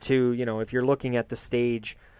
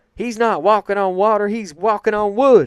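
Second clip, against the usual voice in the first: shrill, very high, very loud character voice; 9 semitones higher, 9 dB louder than usual. Quoting the line of the night from the commentator: J R impression. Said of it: "That's my best J R impression".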